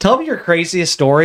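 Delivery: ordinary talk, nothing marked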